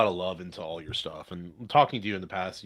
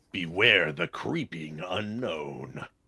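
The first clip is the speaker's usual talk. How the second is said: very slow, dramatic monster-movie trailer voice. Reading a movie tagline aloud after being asked: dramatic movie tagline reading. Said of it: "your best Kahuna reading of a tagline for a movie of this nature voice".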